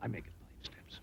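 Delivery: faint, very soft whisper.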